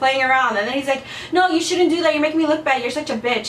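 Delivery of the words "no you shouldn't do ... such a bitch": ordinary talk, nothing marked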